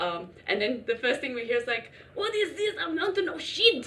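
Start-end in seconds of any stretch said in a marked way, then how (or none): 2.1-3.9 very high-pitched put-on French accent. Retelling what a French guy said in the outhouse: imitating a French guy. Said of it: "the French guy going in there".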